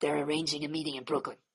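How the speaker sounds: deep, dropped, very quiet low voice. Coaching someone through a movie line, demonstrating it in a low voice. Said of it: "Go low".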